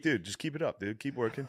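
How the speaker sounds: put-on taunting. Acting out how another speaker would taunt a rival: put-on trash talk. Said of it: "Matt's got brother level shit talk".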